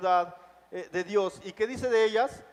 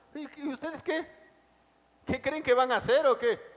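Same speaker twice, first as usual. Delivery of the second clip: play-acted scornful, jeering, high mocking taunting tone; 6 semitones higher than usual. Retelling how men taunted those accused of rebelling against the king, acting out a mocking tone. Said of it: "en tono de burla".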